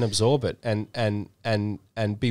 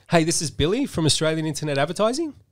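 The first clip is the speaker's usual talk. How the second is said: confused, puzzled-sounding delivery; 6 semitones higher than usual. Opening a pretend sales call: sounding confused. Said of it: "You sound confused".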